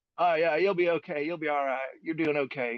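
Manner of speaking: put-on slow drawling voice. Retelling what Chad said after leaning in, imitating Chad's drawl. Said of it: "so he's got this drawl".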